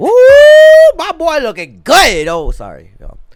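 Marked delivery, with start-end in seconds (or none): 0.0-2.3 far too loud, very high, shrill, swooping. Reacting to a video of a favorite performer: too loud. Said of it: "Am I too loud?".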